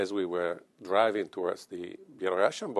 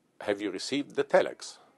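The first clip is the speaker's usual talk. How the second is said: put-on confident, firm, certain, unwavering delivery; 2 semitones higher than usual. Retelling a border crossing, the speaker quotes a colleague confronting guards, imitating a firm, certain voice. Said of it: "he said with no uncertain voice".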